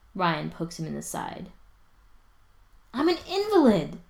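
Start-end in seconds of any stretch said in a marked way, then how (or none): 3.0-3.9 very high, sudden, sharp, shrill yelp. An injured man, poked in the side by another man: yelping. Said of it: "Spencer yelps".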